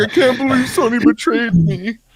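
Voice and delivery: mock very high breathless sobbing, heavy breaths. Retelling a man seen crying on Twitter, imitating crying with heavy breathing. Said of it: "he was just heavy breathing and like crying".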